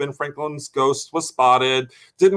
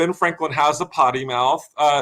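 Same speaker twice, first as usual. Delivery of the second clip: ordinary talk, nothing marked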